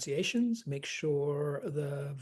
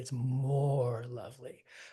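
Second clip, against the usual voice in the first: MORE stressed, hit hard and slowed down. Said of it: "It's not just lovely".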